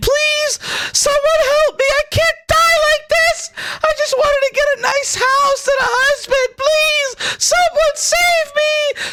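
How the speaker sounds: very high, drawn-out yelling voice. Narrating a fantasy game scene to players, voicing Rakana yelling for help. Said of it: "she's yelling out and saying".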